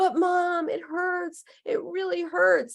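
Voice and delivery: put-on very high, tearful crying child voice. A parent retells a hurt child who keeps crying, imitating a crying child. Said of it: "She keeps crying".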